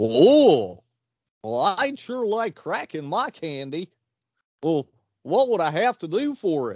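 put-on cartoon dog voice. Answering someone who has just offered a special candy bar, in a Goofy voice. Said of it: "Why the fuck you sound like Goofy?".

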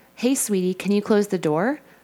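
ordinary talk

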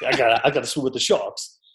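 put-on New Orleans accent. Teasing the listener about a night out, mimicking a New Orleans accent. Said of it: "in your New Orleans accent".

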